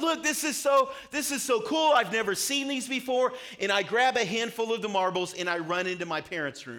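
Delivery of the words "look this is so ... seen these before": high, loud yell full of amazement. Retelling a childhood discovery before running to the parents, a surprised yell. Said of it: "I'm yelling out loud".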